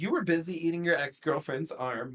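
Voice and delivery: ordinary delivery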